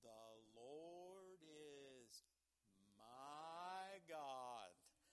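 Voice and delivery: very slow, deliberate word-by-word reading, my drawn out. Speaker tells listeners he will read this real slow, then reads it real slow. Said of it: "I'm going to read this real slow".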